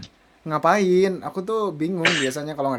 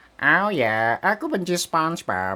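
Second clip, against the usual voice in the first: slow, drawn-out, put-on cartoon voice; 3 dB quieter than usual. Using a Squidward avatar and dubbing him live in a Squidward voice. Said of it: "aku sambil dubbing Squidward juga kayak".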